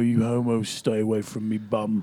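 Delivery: put-on, deep, dark, brooding English accent. Showing the deep dark English accent practiced while driving Lyft. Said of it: "doing the deep, deep, dark, like, English accent".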